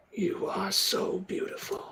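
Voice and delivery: wounded, rasping, pained whisper. Narrating a scene as Madame Matilda kneels beside him: raspy, hurt Cruxus voice. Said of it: "in a raspy, hurt voice".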